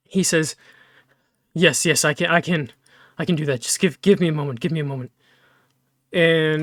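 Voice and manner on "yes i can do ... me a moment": breathing shakily. A character takes the iron flask and answers the request, with shaky breath. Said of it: "His breath is very shaky".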